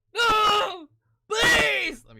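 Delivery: put-on very high, very loud sobbing, crying wail. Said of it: "The one where he's like".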